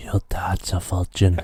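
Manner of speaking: soft whispering. Asked to say it again with a bit of ASMR, in an ASMR whisper. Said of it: "say it again with a bit of ASMR".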